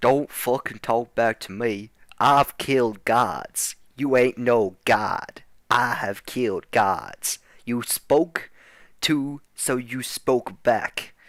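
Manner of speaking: furious, angry put-on cowboy accent. Playing a character threatening his son: redneck cowboy accent. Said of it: "redneck with a cowboy accent".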